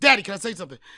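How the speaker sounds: put-on loud, insistent, pestering kid voice. Retelling how his son interrupts the parents: imitating his son's interrupting. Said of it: "He'll just".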